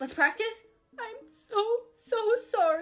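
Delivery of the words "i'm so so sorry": fake crying, much higher, slower. Practicing an apology video, speaking in a fake crying voice. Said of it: "make it look like I'm crying".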